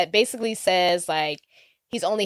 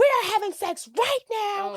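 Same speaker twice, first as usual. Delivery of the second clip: put-on intense voice, pitched higher; 14 semitones higher than usual. Retelling a film scene where a character demands sex: intense retold demand. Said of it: "it's so intense".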